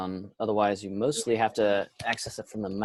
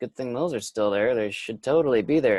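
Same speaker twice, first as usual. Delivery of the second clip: dry, mock-sincere sarcastic tone. Describing features of an area to others: sarcastic. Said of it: "I'm being sarcastic".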